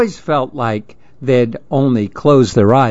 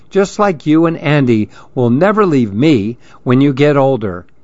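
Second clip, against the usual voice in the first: ordinary delivery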